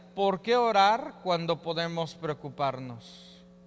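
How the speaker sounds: ordinary talk, nothing marked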